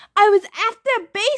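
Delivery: very high-pitched, loud, protesting yell. After losing the flag, Thalia defends herself to a teammate, yelling. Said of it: "Thalia yelled".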